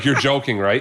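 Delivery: imitated sarcastic tone. Retelling a reply to a cashier: retelling own sarcastic reply. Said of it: "I think I was super sarcastic".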